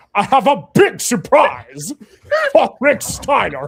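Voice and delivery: creepy theatrical voice, very high, booming, loud, swooping. In honor of the late actor, the speaker performs a line in Tim Curry voice. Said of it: "I'll do it in Tim Curry's vo- voice".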